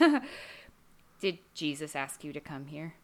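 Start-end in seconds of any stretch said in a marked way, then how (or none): 1.2-2.9 dead serious, low, hushed voice. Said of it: "he looks at her really seriously and he goes".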